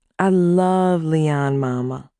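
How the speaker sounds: very slow, sultry purr. Reading a story aloud, a newlywed telling her mother: purring. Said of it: "I purred".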